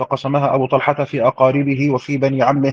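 ordinary talk, nothing marked

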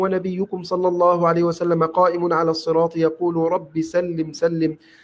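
normal talking voice

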